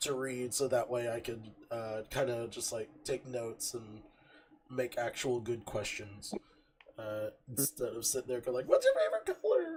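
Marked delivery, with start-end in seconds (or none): 8.7-9.8 very high-pitched, loud, squeaky toy-like voice. Mocking a bad interview question: squeaky toy penguin voice. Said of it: "I sound like the sque-, the, the penguin".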